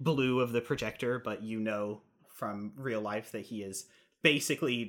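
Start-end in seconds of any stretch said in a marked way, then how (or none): none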